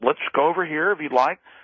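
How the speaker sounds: put-on calm, quiet tone. Retelling what a man said to a scared guy; imitating a calm, quiet voice. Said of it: "He says very calmly, very quietly".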